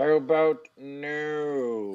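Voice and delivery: villain voice with drawn-out, stretched no. Recapping a match challenge, retelling Cesaro's reply to Daniel as a Dr. Evil impression. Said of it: "does a Dr. Evil impression and says".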